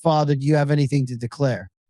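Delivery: ordinary talk, nothing marked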